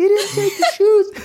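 imitated scream. Retelling leaning out a window at night: retelling a scream. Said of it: "screaming like".

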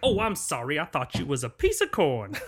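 cartoon rooster drawl, pitch swinging wide. Describing a scene where he comes right at her and she screams, Foghorn Leghorn voice. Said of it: "He's like".

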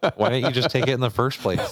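high, loud, laughing retort.

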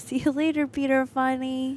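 put-on slow, drawn-out little girl voice. Quoting a little girl from a children's show: Snowy Day little girl voice. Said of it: "you got the inflection down pretty well".

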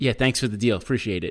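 ordinary talk

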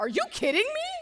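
blurted, very high, very loud, shrill yell. Retelling yelling at a tall man blocking the view at a concert: retelling own loud yell. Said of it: "I yelled at him".

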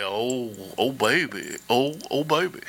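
very low, very slow, leaning-in close-mic voice. Imitating Chris leaning down on the mic: imitating Chris. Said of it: "He's like".

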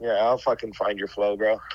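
acted threatening tone. Friend answering another's talk about needing flow, with a joking threat. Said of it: "Was that a threat".

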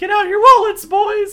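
really bad, very high, loud falsetto.

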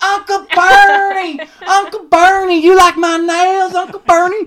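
shrill, very high, loud squealing scream. Retelling an influencer greeting Bernie Sanders as he signs on, imitating her screaming. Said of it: "she starts screaming".

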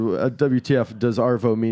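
plain

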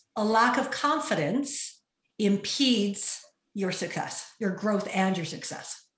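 purposeful, unhurried, slow delivery, every word placed. Asked to say the line slowly, just for Martin: slow and purposeful. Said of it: "I'll say it slowly and purposefully".

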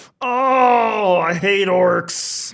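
high, pained scream with drawn-out oh. A game narrator voices a man hit by arrows, screaming in pain. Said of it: "he just starts screaming".

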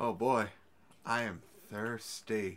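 very slow, each word stretched out. Acting out an imagined scene where Nikolai calls someone over: imitating Nikolai. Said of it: "And Nikolai's just like".

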